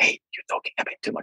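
soft, hushed whisper close in the ear.

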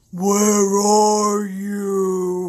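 called out with "you" stretched long. Reading Genesis aloud, the Lord God calls to the man, in a God voice. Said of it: "It's a great God voice".

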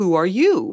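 flat robot-like voice. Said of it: "like robot".

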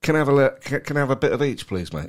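loud confident delivery. Showing how to ask boldly for food: confident chest-out voice. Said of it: "stick your chest out and say".

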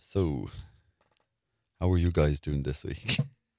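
low, deep voice. Opening the chat with the group, speaking in a deep voice. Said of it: "quite a deep voice there".

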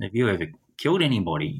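halting, broken, non-native English. Retelling a man approaching him at the clubhouse, imitating broken English. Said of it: "in broken English".

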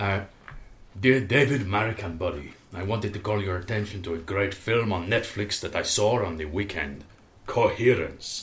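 put-on South American accent leaning Bolivian. Reading a listener's letter as requested, put-on south american accent. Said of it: "to be read in a South American accent, preferably Bolivian".

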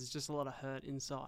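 ordinary talk

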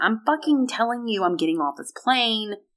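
acted, all-out, high-pitched screaming meltdown. Retelling a girl's meltdown on a plane, imitating someone screaming. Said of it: "But she's screaming".

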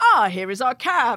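put-on Eastern European accent. Retelling pretending to be foreign to police: imitating a put-on eastern european accent. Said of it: "then we had to do the accent".

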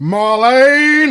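loud, high calling-out in a character style. Showing the false answer call: John Challis voice. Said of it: "in the style of John Challis".

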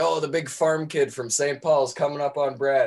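hockey play-by-play sportscaster announcer voice. Retelling how his father pretended to be a hockey announcer, in hockey announcer voice. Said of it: "pretend to be a hockey announcer".

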